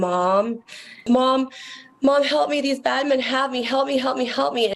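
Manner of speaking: high-pitched, crying, sobbing voice. Retelling a phone call from a daughter: imitating a daughter crying and sobbing. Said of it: "crying and sobbing".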